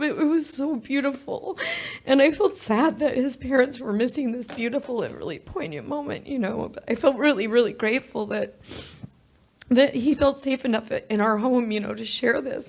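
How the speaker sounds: crying while talking. Telling the story of a son's friend coming out: crying while talking. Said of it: "I know I'm crying and stuff".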